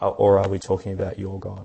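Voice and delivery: stress on the word "or".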